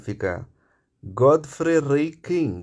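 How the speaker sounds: put-on Indian accent. Opening a book study, saying the author's name in an Indian accent. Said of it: "se eu for fazer um sotaque indiano".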